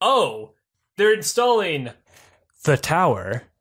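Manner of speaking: mock foreboding, loud, dark, ominous, doom-laden delivery. Retelling how a friend explained something, mock-ominous tone. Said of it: "He said it so like ominously".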